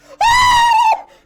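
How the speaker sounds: screaming loudly at the top of the lungs. Voicing an audience member frightened by a dragon: screaming at the top of her lungs. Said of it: "at the top of her lungs".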